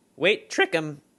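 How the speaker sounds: high, loud voice crack mid-line. Giving dating advice to listeners, voice cracking. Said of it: "I don't know why my voice cracked".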